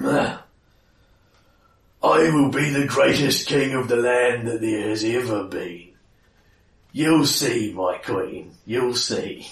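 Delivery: big, loud, gruff, dumb-sounding troll voice. A troll in a cave speaks to his queen, big, dumb, gruff troll voice. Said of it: "You hear a big, dumb, gruff voice".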